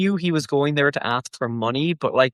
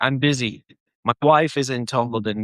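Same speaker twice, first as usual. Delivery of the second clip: ordinary talk, nothing marked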